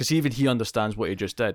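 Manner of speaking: ordinary talk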